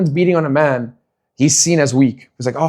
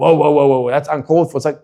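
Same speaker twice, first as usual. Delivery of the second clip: put-on startled, taken-aback protesting tone. Retelling how onlookers react to a man arguing back: imitating people objecting. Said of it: "it's like".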